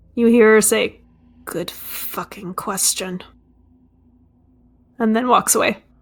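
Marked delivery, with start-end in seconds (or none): 1.5-3.3 muttered aside, lower and quieter. Voicing a character who answers, then walks away: muttering under her breath. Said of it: "you hear her mutter something under her breath".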